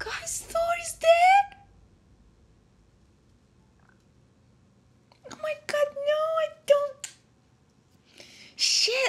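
mad tone. A streamer addresses the guys while playing a game, mad. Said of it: "I'm so mad right now".

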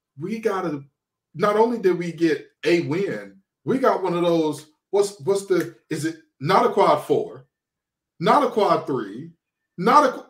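ordinary delivery

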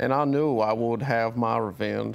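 put-on Southern accent. Asked to perform, doing a Kevin Spacey impression as Frank Underwood. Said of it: "Let me hear your Kevin Spacey in House of Cards".

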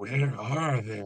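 put-on stoned vigilante voice. Showing how Stoner Batman would ask the question: Stoner Batman voice. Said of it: "he's gotta be Stoner Batman".

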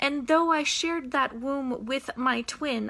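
ordinary talk

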